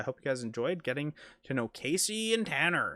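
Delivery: radio announcer, on-air presenter delivery. Host wrapping up a Q and A video, radio announcer voice. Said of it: "That's my radio voice".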